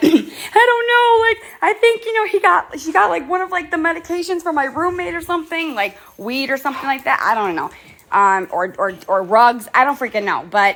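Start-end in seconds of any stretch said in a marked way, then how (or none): 0.0-7.7 crying, very high-pitched and weepy. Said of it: "she was on the phone crying".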